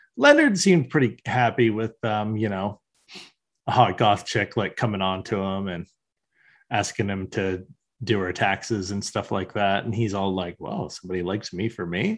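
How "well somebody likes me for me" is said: mock bright, chipper, cheerful upbeat delivery. Retelling a cartoon scene, imitating Leonard sounding upbeat. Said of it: "all upbeat".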